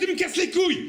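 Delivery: sweet tone snapping into high, fed-up exploding outburst. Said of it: "jusqu'à ce que t'en puisses plus".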